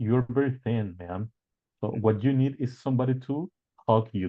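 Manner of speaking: plain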